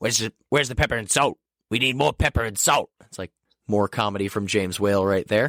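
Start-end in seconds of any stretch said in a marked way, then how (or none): 0.0-2.9 put-on cranky, complaining, curmudgeonly old grandmother voice. Recapping a scene with a monster, voicing the grandmother, curmudgeonly old grandmother voice. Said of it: "just a curmudgeon old character, goes".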